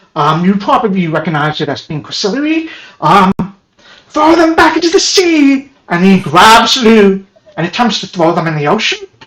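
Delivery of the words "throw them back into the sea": very high, in-character shout. Voicing the same enemy shouting in another language: shouting in character. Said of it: "you just hear him shout".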